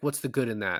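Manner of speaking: normal talking voice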